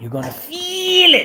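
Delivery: high, slow, drawn-out, laughing mocking taunt.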